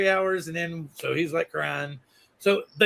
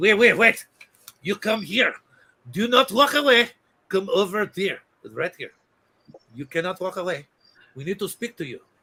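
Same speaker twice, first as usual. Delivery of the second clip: put-on comically laid-on French accent. Retelling someone with a yellow paper stopping them, attempted Clouseau impression. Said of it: "I was attempting Clouseau".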